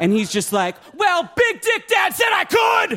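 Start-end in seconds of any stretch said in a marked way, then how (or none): 0.9-3.0 put-on very high, shrieking teenage scream. Imagining an adopted teenager in the kitchen: imitating a teenager screaming. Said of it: "being screamed at by".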